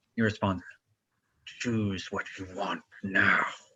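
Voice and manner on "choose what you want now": slow, growling dragon voice. A game narrator voices a creature answering the player: growling. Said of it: "Kind of growls at you".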